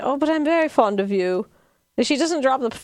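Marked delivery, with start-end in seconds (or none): 0.0-1.5 put-on upper-crust posh accent. Retelling a character's line from an episode: imitating a fake posh accent. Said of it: "the fake posh accent".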